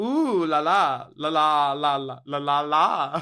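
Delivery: fading down to a whisper. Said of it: "that's basically this, but with la".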